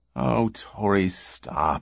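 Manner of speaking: soft, tired, worn-out, weary voice. A woman asks the man questioning her to stop, wearily. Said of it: "she said wearily".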